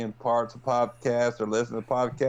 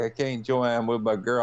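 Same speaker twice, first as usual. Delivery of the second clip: ordinary talk, nothing marked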